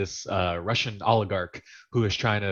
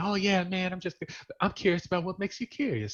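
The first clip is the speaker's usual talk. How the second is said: cool, relaxed talk pitched slightly higher; 9 semitones higher, 4 dB quieter than usual. Praising how an actor talks, then imitating him: cool Jamie Foxx way of talking. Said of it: "He's so cool the way he talks".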